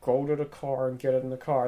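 soft, hushed voice under the breath. Retelling how dad told mom to get in the car, imitating dad half-whispering. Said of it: "my dad whispers to my mom".

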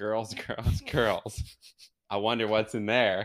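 mock utterly flat, deadpan tone. Retelling what a man said while looking out the window, retelling a deadpan remark. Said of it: "he was so deadpan".

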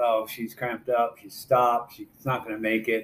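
plain

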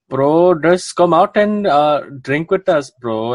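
put-on slow, high-pitched Indian accent with long, stretched words. Retelling a friend urging the speaker to come out drinking, imitating the friend's accent. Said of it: "I'm gonna do the accent".

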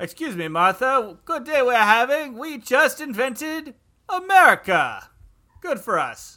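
put-on strange, odd-sounding Greek accent. Speaking to another character in a comedy scene: sounding like a Greek. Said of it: "Why are you sounding like Greeks?".

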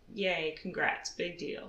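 openly sarcastic, unimpressed delivery. Congratulating a team on its first Champions League win: sarcastic tone. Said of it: "that sounded sarcastic".

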